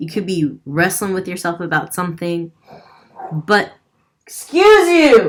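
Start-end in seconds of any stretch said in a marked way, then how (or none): 4.3-5.3 sharp, shrill, very high, very loud yell. Reading a card that is a wake-up call: yelling. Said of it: "I'm yelling at you right now".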